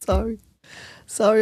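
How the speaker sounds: giggling, words broken up by laughter. Apologizing to the others before continuing: laughing while talking. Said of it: "I'm laughing so much".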